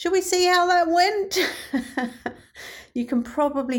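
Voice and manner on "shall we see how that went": high, sarcastic, teasing. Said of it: "sense a little bit of sarcasm in my voice".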